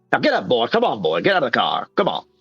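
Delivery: put-on drawling cartoon rooster voice. Acting out how they talked to people they pulled over, in a Foghorn Leghorn voice. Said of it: "how Foghorn Leghorn sounded, that's like exactly how they would".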